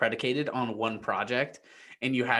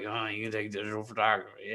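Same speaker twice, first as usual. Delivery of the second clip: mumbling under breath, quieter; 2 semitones lower, 5 dB quieter than usual. Retelling what the counselor said: imitating mumbling under her breath. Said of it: "kinda mumbling under her breath".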